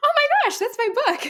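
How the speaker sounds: very high, startled, excited yelp of surprise. Retelling finding their own book in a bookstore, re-enacting a yelp. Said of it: "I kind of yelped like".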